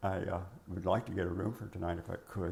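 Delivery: ordinary talk, nothing marked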